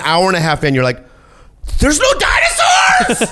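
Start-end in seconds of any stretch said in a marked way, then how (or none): 1.8-3.3 put-on screaming, higher. Acting out a viewer's reaction to a disappointing movie: acting out a scream. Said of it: "I think I'm sc-, screaming too much".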